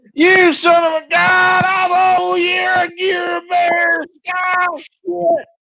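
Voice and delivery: half-garbled yell, pitched way up. Playing a character facing a bear in the camp, yelling a battle cry. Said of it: "Just yelling at the top of his lungs".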